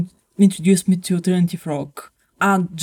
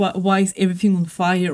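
ordinary delivery

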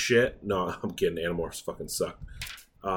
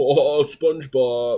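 terrible, badly done put-on cartoon starfish voice; 4 semitones higher, 6 dB louder than usual. Host mentions fans of Patrick Starr, then does a terrible Patrick Star impression. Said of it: "terrible, terrible impression".

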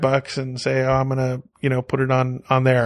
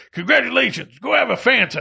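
terrible, very high, rough put-on voice; 10 semitones higher than usual. Quoting a navigation voice's arrival line: terrible Mister T impersonation. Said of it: "that's a terrible Mister T, um, impersonation".

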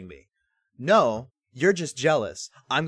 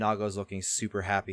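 normal talking voice

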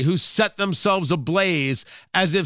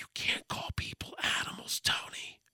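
soft, breathy, very hushed whisper. Speaker breaking from his own remarks to address Tony, Joe Biden whisper. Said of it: "that was my Joe Biden whisper there".

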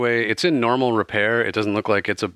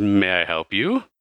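put-on elderly man's voice, slower. Game master voices an older gentleman peering out a door at the players, older gentleman voice. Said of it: "face of an older gentleman. And he says".

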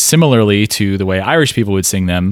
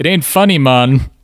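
weird put-on Caribbean accent, much higher; 5 semitones higher than usual. Speaker imitating a man's put-on voice for another listener, weird Caribbean accent. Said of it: "the weird Caribbean voice he's putting on".

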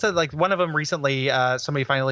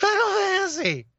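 sudden, very high, shrieking screamed shout. Recalling someone running up on the playground, retelling a Bobcat Goldthwait scream.

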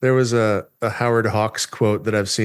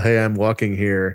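usual speaking voice

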